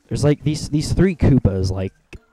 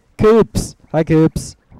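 high, loud yelling. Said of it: "Pardon me for yelling like that".

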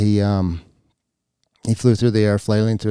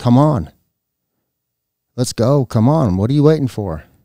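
higher, louder yelling. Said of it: "yelled across the street at him".

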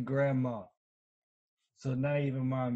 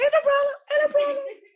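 very high, loud, mock laughing falsetto. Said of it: "He said".

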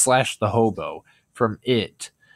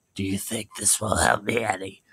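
eerie, sinister, creepy clown voice; 5 dB quieter than usual. Describing a scene from a film seen in theaters, Pennywise voice impression. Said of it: "my Pennywise voice impression".

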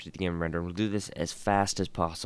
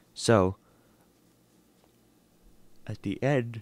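yawning mid-sentence, higher; 3 semitones higher, 3 dB louder than usual. A speaker who didn't get much sleep last night, yawning mid-sentence. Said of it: "I'm yawning so much".

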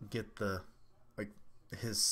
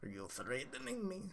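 put-on high, frantic cartoon teen; 9 semitones higher, 10 dB quieter than usual. Reading a character's line aloud, doing Beavis as Cornholio voice. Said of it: "read this like Beavis when he goes into Cornholio mode".

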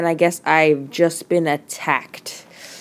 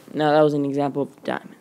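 rushed, fast rattled-off talking. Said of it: "Sorry, I'm talking fast".

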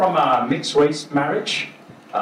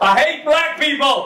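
very high, drawn-out shout; 13 semitones higher than usual. Retelling getting up on stage at a gig and shouting out to the crowd. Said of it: "So I shouted out".

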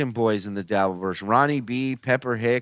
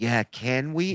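creepy mimicking voice; 3 dB quieter than usual. Retelling how someone backed up a question in the creepiest way: creepy imitation of Zen. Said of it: "in the creepiest way possible".

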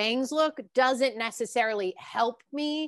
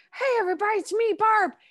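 very high, upbeat, cheery character voice; 10 semitones higher, 3 dB louder than usual. Showing what a made-up character's voice sounds like: Barb character voice. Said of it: "the voice of Barb sounds like".

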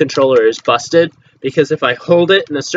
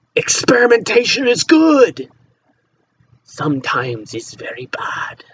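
slow, put-on Irish pirate accent; 7 semitones higher than usual. Talking through a headset setup, the speaker rambles in an Irish pirate accent. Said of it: "I'm talking like an Irish pirate".

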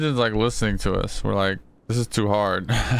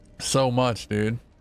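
dry, sarcastic, ironic tone. Gamer answering another player's brag about money, sarcastic. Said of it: "I was being sarcastic".

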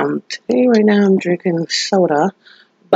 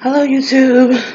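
winded, out-of-breath voice, pitched up; 7 semitones higher than usual. Greeting YouTube viewers at the start of a video, out of breath. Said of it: "I'm out of breath".

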